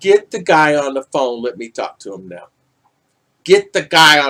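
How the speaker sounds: heated, angry, commanding, insistent delivery. Retelling helping a daughter with distance learning: imitating own angry demand. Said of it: "I got so angry".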